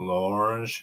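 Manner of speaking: fake French pronunciation of "L'Orange". Joking about a name, trying a put-on French accent. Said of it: "Trying to do the French accent".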